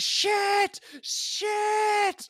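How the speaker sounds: acted yelling. Describing a game scene where a character swears, imitating Ellie yelling in terror. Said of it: "she's just yelling".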